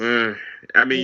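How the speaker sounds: ordinary delivery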